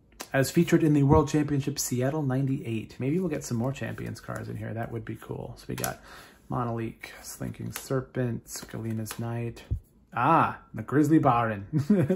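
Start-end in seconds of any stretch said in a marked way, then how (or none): 10.7-12.2 loud, awful put-on German accent. Reading a German card name aloud: awful German accent. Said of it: "my German accent is awful".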